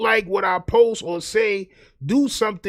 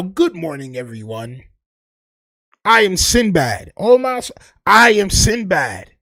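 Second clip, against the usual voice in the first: put-on polite voice; 5 dB louder than usual. Mocking someone who is suddenly talking so polite, use a polite Sinbad voice. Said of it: "why you talking with the Sinbad voice now".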